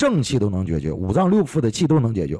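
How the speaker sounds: ordinary delivery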